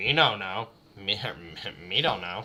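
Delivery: drawn-out slow villager voice. Fumbling a reply, then joking about sounding like a villager. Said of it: "Sound like a villager there".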